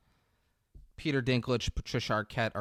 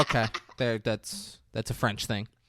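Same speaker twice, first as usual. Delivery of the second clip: plain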